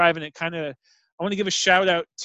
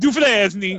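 put-on dufresne pronounced with an Italian accent; 3 dB louder than usual. Retelling a man who butchered the French name Dufresne: Italian accent on Dufresne. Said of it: "then he says it with like an Italian accent".

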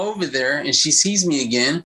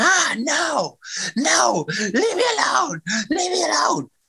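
mock very high, desperate shrieking scream; 13 semitones higher than usual. Retelling someone's reaction to being told to get out: imitating someone screaming. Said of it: "She starts screaming".

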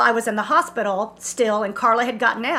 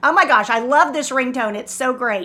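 normal talking voice

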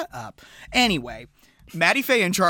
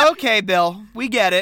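ordinary talk

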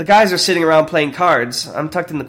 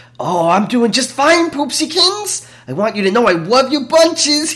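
over-the-top mocking, teasing tone, pitched up; 8 semitones higher than usual. Voicing a man answering the radio: exaggerated mocking tone. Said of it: "a man with an exaggerated mocking tone".

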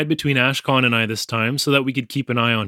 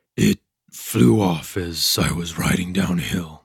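deep, unhurried murmur, very low; 7 semitones lower than usual. Narrator reads a friend's reply to a question, murmuring. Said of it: "he murmured".

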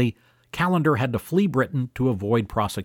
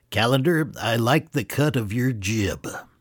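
put-on scheming old tycoon voice. Narrator retelling what Jefferson said to Callender, in Montgomery Burns voice. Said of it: "in his best Montgomery Burns voice".

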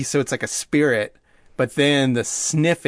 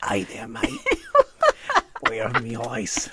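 put-on Australian accent on every word; 3 semitones lower, 4 dB quieter than usual. Imagining how something in Aladdin talked, in an Australian accent. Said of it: "I imagined it had an Australian accent. And it was like".

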